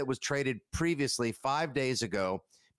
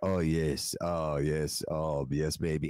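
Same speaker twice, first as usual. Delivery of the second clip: imitated whisper, much lower and slower; 8 semitones lower than usual. Describing a clip, act out what the man feeding the donkey says, imitating someone whispering. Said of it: "he's whispering".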